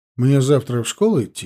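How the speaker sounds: plain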